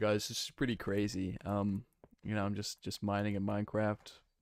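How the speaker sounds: ordinary delivery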